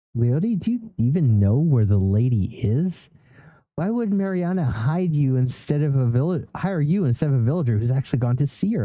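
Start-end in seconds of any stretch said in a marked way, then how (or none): none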